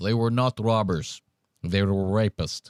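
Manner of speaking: put-on low-pitched Middle European accent. Retelling a story, the speaker quotes a man's daughter in a Middle European accent. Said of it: "the dad had the American accent".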